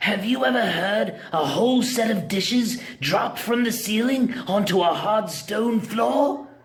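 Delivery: raspy, hoarse voice, very high pitch. Reading a story aloud, voicing a stranger inside a wagon: hoarse voice. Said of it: "A hoarse voice inquired".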